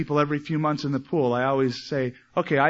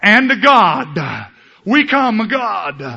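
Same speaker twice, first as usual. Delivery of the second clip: booming, very loud, high preacher pulpit voice; 6 semitones higher, 10 dB louder than usual. A speaker showing how people talk when addressing God, in a prayer voice. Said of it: "This prayer voice".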